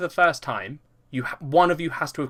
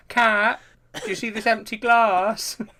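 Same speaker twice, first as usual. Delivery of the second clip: put-on pitiful, babyish, high, slow pathetic whine; 7 semitones higher than usual. Imitating the other speaker asking Cat for a drink: imitating a pathetic babyish voice. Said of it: "you do a very sort of pathetic voice sometimes".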